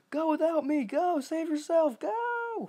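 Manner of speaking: very high, loud, desperate screaming. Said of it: "I'd always scream".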